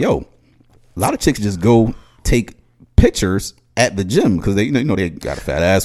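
ordinary talk

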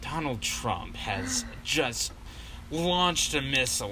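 drowsy, creepily calming, calm sleepy news announcer voice. Mocking how late-night news voices sound: imitating a sleepy calm newsreader. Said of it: "that's how he talks".

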